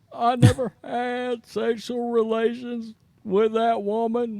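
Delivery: squeaky, very high put-on voice, pushed way up. Bringing out a little Billy for the famous denial: Bill Clinton impression. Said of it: "He wants me to bring out a little Billy today".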